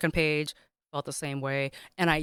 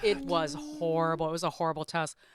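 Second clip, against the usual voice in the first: normal talking voice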